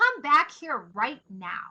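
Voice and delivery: firm mom voice. Showing the group a parent calling someone back: firm mom voice. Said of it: "Can you picture that like firm mom voice?".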